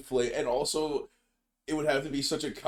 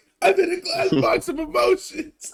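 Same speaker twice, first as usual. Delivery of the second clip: very high, very loud blubbering, sobbing cry; 9 dB louder than usual. Retelling a movie scene where he calls from a phone booth: imitating Ron Burgundy crying. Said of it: "crying and shit".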